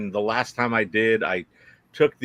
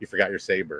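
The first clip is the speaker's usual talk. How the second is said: mock muttered tone under the breath; 4 semitones lower, 4 dB quieter than usual. Traveler retelling a fellow passenger's remark in passing: muttered under breath. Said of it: "almost under his breath".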